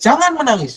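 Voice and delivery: loud, sharp, firm delivery packed with power. Showing how a short command stops someone crying: forceful sharp command. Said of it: "sebuah statement yang punya power di situ".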